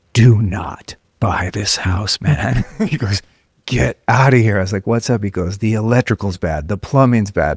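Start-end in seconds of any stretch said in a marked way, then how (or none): 0.2-2.7 very slow, drawn-out, secretive stage whisper. Retelling what a man said after checking that no one was listening: retelling a whisper. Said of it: "he whispers".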